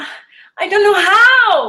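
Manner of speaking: high, loud, panicked cry.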